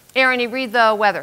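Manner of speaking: plain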